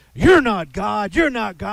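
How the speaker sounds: high, full-throated furious shouting at full volume. Retelling how a man in a housing unit interrupted teaching: imitating a man shouting. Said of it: "he just starts shouting at me".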